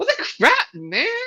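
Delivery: put-on very high, nasal, prepubescent kid voice. Voicing a teenage ghost getting hit: nasally prepubescent kid voice. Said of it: "that nasally prepubescent kid voice".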